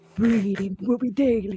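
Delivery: put-on deep e-boy style voice. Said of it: "deep like corpse like VTuber e-boy voice".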